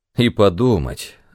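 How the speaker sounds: plain reading voice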